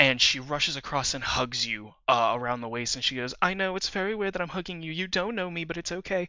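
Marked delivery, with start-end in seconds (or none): 3.4-6.3 put-on tearful, sniffly, pitched-up, slightly crying voice. Voicing a character hugging a stranger: tearful, sniffling. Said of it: "she's sniffling and crying a little bit".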